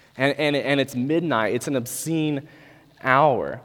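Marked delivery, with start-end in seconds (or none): none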